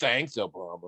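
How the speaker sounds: put-on disdainful tone dripping with contempt. Retelling the stock reply to a rental car upgrade: imitating a disdainful tone. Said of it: "with the same disdain in our voice".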